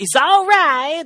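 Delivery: very high, very loud, shrill squealing cartoon voice. Chatting about a game collection, doing a line as Japanese Sonic voice. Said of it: "That's how Japanese Sonic sounds".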